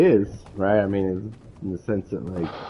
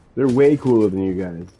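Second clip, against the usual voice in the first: plain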